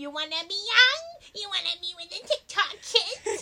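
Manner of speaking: high, witch-like put-on voice. Speaking to the other person in a put-on voice: witchy voice. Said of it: "Is that your witchy you voice?".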